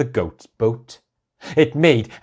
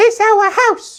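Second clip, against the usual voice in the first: loud, very high, squeaky mouse voice; 6 dB louder than usual. Reading a children's story, the mother mouse answers a question: squeaky mother mouse voice. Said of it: "squeaked the mother mouse".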